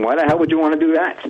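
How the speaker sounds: ordinary delivery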